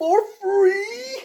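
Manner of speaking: shrill, loud shriek, "free" drawn out. Retelling a movie scene, a terrible John Lithgow impression. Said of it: "It's a terrible impression".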